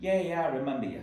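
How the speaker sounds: bad fake Boston accent. Retelling a woman at a bar saying she recalls him, horrible boston accent. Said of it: "sorry for my horrible Bostonian accent".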